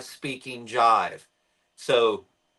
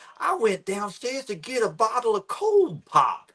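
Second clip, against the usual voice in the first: put-on woman's voice, higher pitched; 9 semitones higher than usual. Retelling a news video of a woman whose house caught fire: imitating woman from a news clip. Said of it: "impersonation you're doing".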